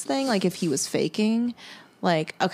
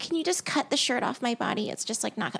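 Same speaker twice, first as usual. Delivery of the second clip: put-on baby talk, higher and quieter; 4 semitones higher, 5 dB quieter than usual. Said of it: "talk in a baby voice".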